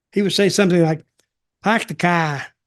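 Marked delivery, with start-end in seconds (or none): 1.6-2.5 put-on heavy, thick Boston accent, laid on thick. Retelling first meeting Kevin and not understanding him: Kevin's thick Boston accent. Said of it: "really thick Boston accent".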